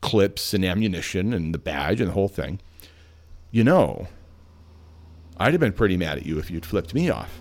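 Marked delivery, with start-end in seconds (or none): 3.5-7.3 acted, dead-serious, very stern no-nonsense trooper tone. Retelling what a state trooper said across his large desk: imitating a very stern trooper. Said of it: "very, very sternly".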